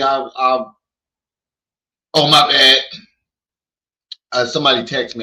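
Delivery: slow, distracted, halting, half-attention talk. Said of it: "the only time you talk like this on the phone".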